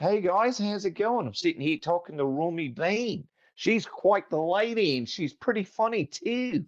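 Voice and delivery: put-on Australian accent. Demonstrating the Australian accent he throws in, Australian accent. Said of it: "I'll throw in an Australian accent".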